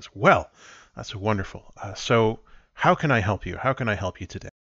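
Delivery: proud, puffed-up tone. Voicing a character who puffs up his chest: proud, puffed-up tone. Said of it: "he looks very proud and he says".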